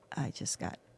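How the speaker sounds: whispered speech. Retelling quietly telling a husband about a shark hit: imitating own past whisper. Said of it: "I whispered".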